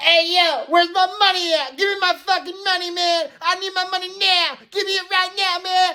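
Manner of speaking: mock, very high, shrill, demanding screaming. Retelling what a guy in the hospital yelled, imitating someone screaming. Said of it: "this guy's like freaking screaming this".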